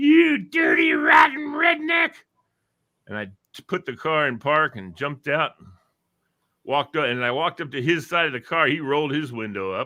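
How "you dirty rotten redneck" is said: shrill, angry, very high, drawn-out swooping scream. Retelling how a wife leaned out a car window: imitating someone screaming. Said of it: "hanging her head out the window screaming at me".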